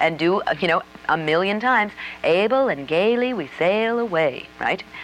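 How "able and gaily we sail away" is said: slow Southern accent. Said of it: "in the accent that you're trying to".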